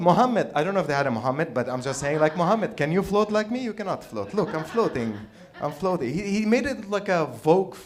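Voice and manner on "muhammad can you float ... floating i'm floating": put-on Arabic accent, pitched higher. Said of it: "that's his accent".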